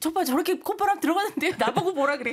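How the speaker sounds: mock grumble, high-pitched and fast.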